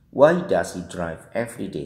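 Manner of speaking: falling pitch on final day. English intonation lesson on questions with a question word: falling pitch on day.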